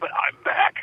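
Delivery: hoarse whisper, voice gone. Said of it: "I was talking like this".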